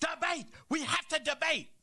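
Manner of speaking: high, mock screaming voice.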